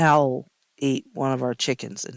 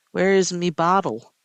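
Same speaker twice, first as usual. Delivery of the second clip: put-on little kid pirate voice, higher, slower; 4 semitones higher than usual. A parent imitating how their young son asked for his bottle, little pirate voice. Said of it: "He sounded like a little pirate".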